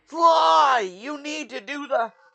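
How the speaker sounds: very high, very loud, drawn-out voice. Speaker showing what the modern Bentley sounds like: modern Bentley impression. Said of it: "His modern Bentley is more along the lines of this".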